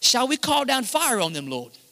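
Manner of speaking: put-on European accent. Retelling a Bible story, the speaker voices the disciples: European accent. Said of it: "like I just wanna start talking in like this European accent".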